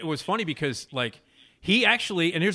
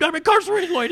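put-on belligerent drunk shouting; 13 semitones higher, 7 dB louder than usual. Recognizing themself as the drunk guy in what they read, the speaker retells a drunken scream. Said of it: "the drunk asshole who screamed".

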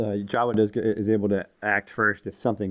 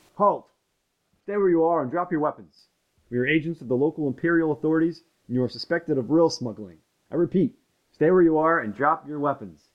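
screaming, much higher pitch; 7 semitones higher than usual. Describing a voice from a cave ordering the group to halt, screaming command. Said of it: "you hear a voice ... scream".

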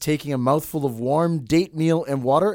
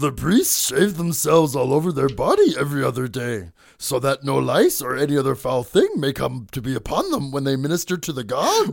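put-on little creature voice. Reading a quote from Herodotus aloud after being told he sounds like Yoda: Yoda voice. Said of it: "When you do Yoda but don't do the backwards talking".

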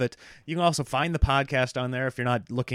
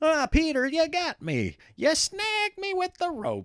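silly, very high, swooping goofy cartoon wolf voice. Show how you make the story's wolf sound unintimidating at bedtime, in a goofy wolf voice. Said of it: "I give the wolf a goofy voice".

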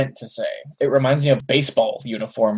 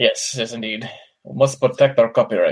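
put-on Russian-sounding accent. Reacting to a video taken down by Saban Brands: Haim Saban impression. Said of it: "Saban is not Russian".

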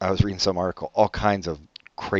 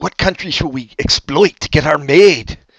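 very loud, high, put-on German accent; 8 semitones higher, 10 dB louder than usual. Mid-conversation, putting on a voice: mock german accent. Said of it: "It's German".

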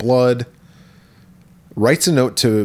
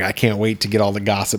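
plain

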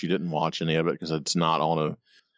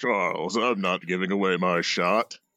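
put-on British actor voice. Quoting Magneto speaking to Charles, in an Ian McKellen voice. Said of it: "I wish I could do an Ian McKellen voice".

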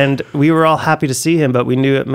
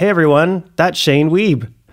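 mild, play-acted, teasing calling out; 3 semitones higher than usual. Retelling calling out to friends at Tim Hortons on seeing someone, in a fairly loud voice. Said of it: "in a fairly loud voice".

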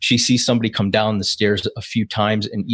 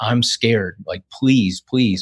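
mock frightened pleading tone. Retelling a woman's emergency call to the call taker: imitating someone pleading. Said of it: "you hear her pleading".

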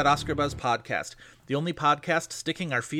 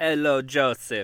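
put-on, sexy, seductive Transylvanian accent; 3 dB louder than usual. Co-host greets the host at the top of the show, in a sexy Transylvanian accent. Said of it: "This is my sexy mother Transylvania accent".

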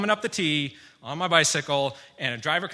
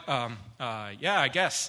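mock dazed mumble, lower pitch; 3 semitones lower than usual. Retelling being hit by a car, quoting own reply: imitating own dazed reply. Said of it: "really dazed".

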